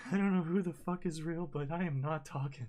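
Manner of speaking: high, loud, unhinged, manic blurt. A narrator voices a character's words in a game scene; manic outburst. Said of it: "he just seems to be in a manic state once again".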